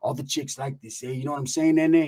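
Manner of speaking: laid-back, tough-guy street gangster speech. Retelling what a friend's son said about his hair: imitating gangster talk. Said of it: "he talks like a gangster".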